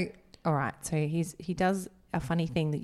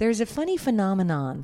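put-on American accent, higher; 4 semitones higher, 5 dB louder than usual. Speaker who stumbles over a word switches to saying it in an american accent. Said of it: "I can say it if I say it in American accent".

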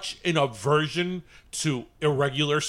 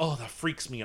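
put-on mutter under breath, quieter; 3 semitones lower, 7 dB quieter than usual. Retelling own reaction at the store: imitating muttering under breath. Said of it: "I said it under my breath".

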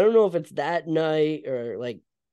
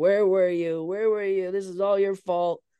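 mock yelling outburst, blaming, pitched up; 5 semitones higher than usual. Retelling a movie scene where a grieving father blames Lewis: imitating a father yelling. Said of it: "yelling at Lewis".

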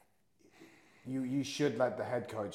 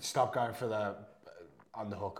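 plain

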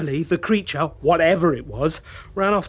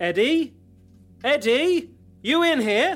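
loud, high, drawn-out shouting; 6 semitones higher than usual. Calling for a missing person in a small room: shouting. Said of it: "You don't need to shout".

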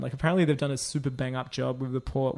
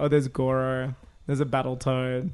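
usual speaking voice

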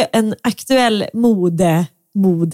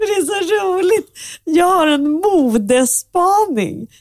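giggling, laughing through the words, pitched up; 8 semitones higher than usual. Reacting to the other speaker's fashion tip, laughing while talking. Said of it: "Varför skrattar du?".

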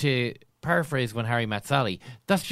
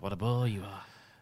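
put-on Irish broadcaster voice, lower and quieter; 4 semitones lower, 7 dB quieter than usual. Repeating a played catchphrase clip: Vincent Browne impression. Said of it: "was that a Vincent Brown impression?".

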